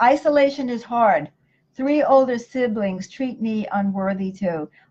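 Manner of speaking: ordinary talk, nothing marked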